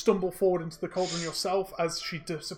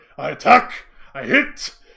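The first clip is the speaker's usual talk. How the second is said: aggressive growl, very loud, rough and slow; 3 semitones lower, 13 dB louder than usual. Narrating a fight, voicing the axe-wielder's turn in a growling, aggressive angry voice. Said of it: "growling, aggressive, like angry voice".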